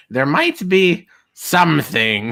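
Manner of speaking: creepy hunchbacked character voice. Recounting what a man says, the speaker quotes him in an Igor-like voice. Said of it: "are you making him sound like Igor".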